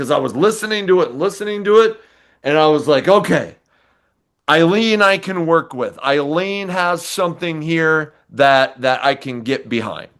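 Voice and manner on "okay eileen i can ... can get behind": ordinary talk, nothing marked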